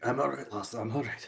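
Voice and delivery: soft, hushed stage whisper. Voicing Torquil answering another character: half-whispering in character. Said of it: "Torquil whispers".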